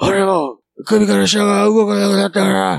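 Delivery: high, raspy voice.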